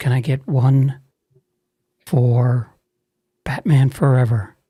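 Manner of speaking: imitated whisper. Retelling a hooded customer leaning in at the box office, retelling a whisper. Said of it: "Why are we whispering?".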